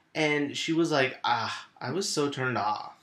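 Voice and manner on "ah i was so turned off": put-on slow, drawling, drawn-out teenage girl voice. Retelling what a niece said about a boy: imitating a niece's voice. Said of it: "That's my niece's voice right there".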